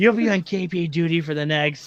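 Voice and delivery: speaking in a whisper. Voicing an officer who scolds the players before they leave: whispering. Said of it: "you already hear him whispering".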